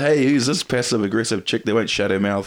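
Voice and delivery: mock, playful heckling taunt. An MC recalls trash-talking the crowd one night: retelling taunting the crowd. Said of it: "shit talking the crowd".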